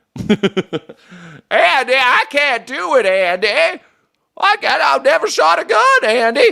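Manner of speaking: very high comic voice. Joking about old-school cops like Andy Griffith, the speaker does a Don Knotts impersonation. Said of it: "That's my Don Knotts impersonation".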